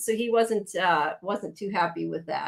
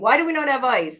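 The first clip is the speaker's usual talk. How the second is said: mock screaming, high and loud; 6 semitones higher, 5 dB louder than usual. Retelling how an upset man went outside and yelled at everybody, imitating someone screaming. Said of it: "he's like screaming at everybody".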